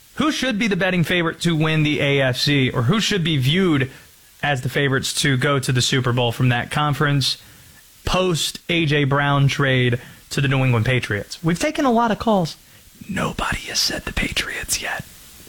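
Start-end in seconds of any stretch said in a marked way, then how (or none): 11.5-15.1 hushed whisper, much higher. Between listener calls, the show host speaks to the audience, whispering. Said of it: "Don't know why I'm whispering".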